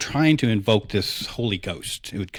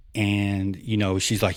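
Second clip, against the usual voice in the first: usual speaking voice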